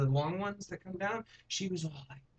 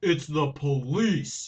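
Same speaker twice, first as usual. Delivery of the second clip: booming, very loud, put-on very deep voice; 9 dB louder than usual. Retelling a knock at the door, imitating the reply in a real deep voice. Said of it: "In a real deep voice".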